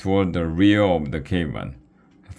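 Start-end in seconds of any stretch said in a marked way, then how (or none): none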